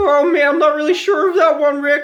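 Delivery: very high, unsure, hesitant voice. Teaching how to do the two voices, showing the second one: unconfident Morty voice. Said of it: "sound like you lack the confidence".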